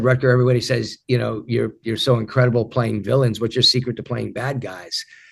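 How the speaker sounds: plain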